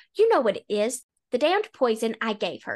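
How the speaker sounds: usual speaking voice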